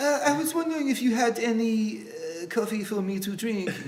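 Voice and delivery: put-on French accent. Trying out accents with friends after asking for one, french accent. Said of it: "Can you do a French accent?".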